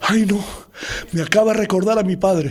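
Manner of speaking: put-on crying, tearful woman's voice. Retelling how a secretary started crying on seeing the speaker, imitating a woman crying. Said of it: "Y la mujer se pone a llorar".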